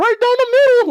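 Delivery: very high, loud cartoon-style squeak. Retelling what another person said back then, in the Mickey Mouse voice. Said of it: "like in the fucking Mickey Mouse voice".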